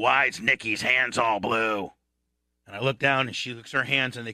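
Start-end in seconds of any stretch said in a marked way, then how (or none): 0.0-1.9 slow, deliberate, drawn-out voice. Retelling the girlfriend's dad waiting in the kitchen: imitating Boots's way of talking. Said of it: "That's how he talked".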